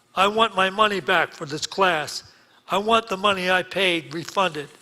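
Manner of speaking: yelled out at full voice, loud and forceful. Retelling an argument, imitating a man shouting from a chair. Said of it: "He jumps up on a chair and shouts".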